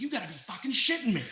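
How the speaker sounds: play-acted, sudden, blurted, high-pitched yell. Retelling own reaction to a game-tying three-pointer: imitating own yell. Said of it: "I yelled something like".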